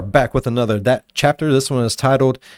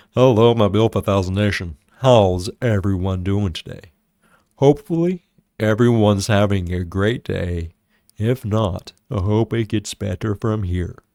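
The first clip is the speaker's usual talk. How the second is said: creepy, overly deep, dropped-down voice; 5 semitones lower than usual. Imitating another speaker's sudden change of voice: imitating Mike's deep voice. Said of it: "Why did you go from talking normally to talking like this?".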